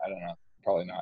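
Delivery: plain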